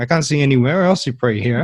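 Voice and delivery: ordinary talk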